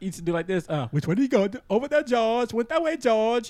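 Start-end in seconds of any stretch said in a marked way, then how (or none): 1.7-3.5 high, put-on cartoon character voice. Asked by another speaker to do a cartoon voice, the speaker performs one. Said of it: "Do a cartoon voice for us".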